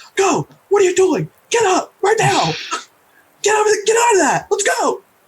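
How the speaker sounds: loud, very high, urgent shouting. Speaker acts out yelling at the children after hearing a warning: yelling urgently at children. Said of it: "I'm like yelling at the children".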